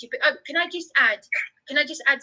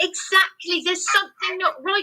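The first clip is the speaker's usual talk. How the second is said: raised, forceful voice, pitched up; 6 semitones higher than usual. Discussing time spent in temporary accommodation, agreeing something is not right, raised voice. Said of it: "Sorry to raise my voice".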